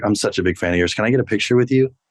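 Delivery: voiced stage half-whisper. Retelling asking for a picture with a fan's greeting: retelling a half-whisper. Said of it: "And I whispered".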